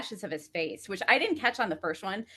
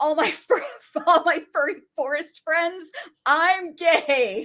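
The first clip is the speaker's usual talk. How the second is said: play-acted shrill, all-out, very high screaming outburst; 9 semitones higher, 4 dB louder than usual. Acting out a character's coming-out speech from a show: imitating a character screaming. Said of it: "He's, like, screaming at this point".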